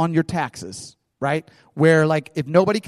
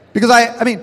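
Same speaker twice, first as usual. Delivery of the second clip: ordinary talk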